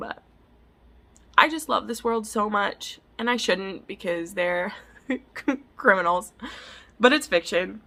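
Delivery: tearful, crying while speaking. Gushing about a fictional crime world's characters, crying while talking. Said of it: "Sorry I'm crying".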